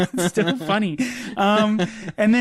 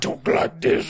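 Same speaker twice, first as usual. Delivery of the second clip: really creepy delivery. Recalling the cartoon villain who was never shown: creepy Doctor Claw voice. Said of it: "it was a really creepy voice that he had".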